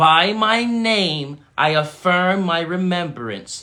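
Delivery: slow, forceful, full-voiced, from the chest. Leading the group in saying an affirmation: said with your chest. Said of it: "Say it with your chest".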